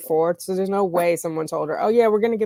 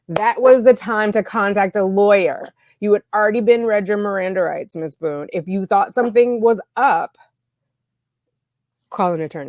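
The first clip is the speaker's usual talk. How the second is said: shouting loudly at full voice, raised; 3 semitones higher, 4 dB louder than usual. Speaking directly to the defendant, Miss Boone, about her rights, yelling. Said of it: "sorry, am I yelling too much?".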